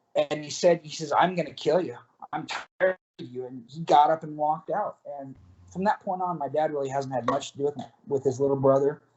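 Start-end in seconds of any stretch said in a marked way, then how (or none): 1.1-3.4 put-on demonic voice. Retelling a family member's threat to the dad's little brother, in a demonic voice. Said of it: "in the most demonic voice".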